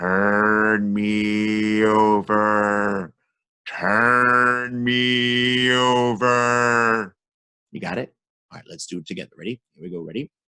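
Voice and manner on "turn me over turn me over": eerie, very slow, spooky voice, me drawn out. Teaching listeners the last and most important sound, in a spooky voice. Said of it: "It's the spooky voice".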